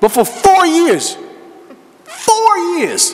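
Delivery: high passionate outcry. Coach speaking about a basketball hoop left broken for years: raised, passionate voice. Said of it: "I'm raising my voice because I'm passionate about it".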